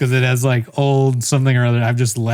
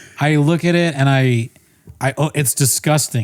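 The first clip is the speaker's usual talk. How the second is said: ordinary talk, nothing marked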